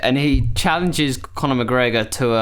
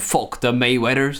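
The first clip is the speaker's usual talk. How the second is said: ordinary delivery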